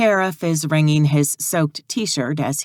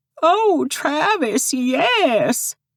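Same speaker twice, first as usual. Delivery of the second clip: very high, fake shrill voice, yes drawn out; 12 semitones higher than usual. A sheriff pretends to be two people kissing, in a fake shrill voice. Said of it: "In a fake, shrill voice".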